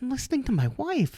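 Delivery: high, gushing, lovestruck voice. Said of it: "I was like".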